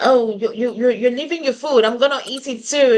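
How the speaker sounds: sarcastic tone. Retelling how a man covered up his behaviour: imitating a sarcastic remark. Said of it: "tried to cover it up with sarcasm".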